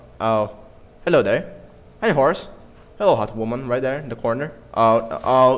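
ordinary talk, nothing marked

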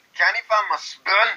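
put-on Scottish accent, pitched way up. Taking accent prompts from another speaker, doing the one called out: Scottish accent. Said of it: "Scottish accent".

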